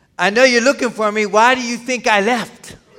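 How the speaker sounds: mock-sarcastic tone. Speaker acting out how they might have answered someone looking for them, mock-sarcastic retort. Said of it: "I might have been even more sarcastic and said".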